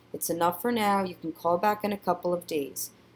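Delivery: ordinary delivery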